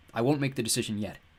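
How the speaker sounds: plain reading voice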